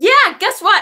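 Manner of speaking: full-on acted shouting. Retelling an argument after she asked who was yelling, retelling own yelling. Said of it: "Now I'm fucking yelling".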